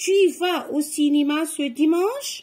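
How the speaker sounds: intonation rising, climbing on "dimanche". French lesson, changing punctuation to a question mark: question intonation. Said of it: "je mets un point d'interrogation et je change l'intonation".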